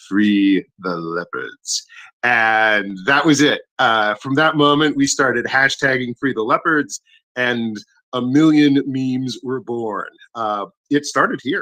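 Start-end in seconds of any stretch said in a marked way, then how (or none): 0.1-1.9 put-on deep cool voice, slower. Retelling Axel's flash of inspiration at the microphone, imitating Axel's cool deep voice. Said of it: "in his very cool voice, his very deep tone".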